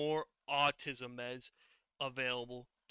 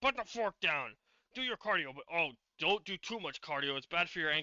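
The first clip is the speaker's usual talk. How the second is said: acted telling-off voice; 2 semitones higher, 4 dB louder than usual. Imitating the voice he hears in his head while eating: imitating Greg. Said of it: "I can hear frickin' Greg's voice in my head".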